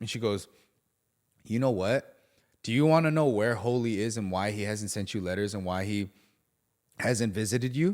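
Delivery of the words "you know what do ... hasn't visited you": ordinary delivery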